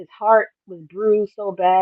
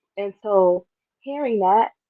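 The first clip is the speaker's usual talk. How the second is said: ordinary talk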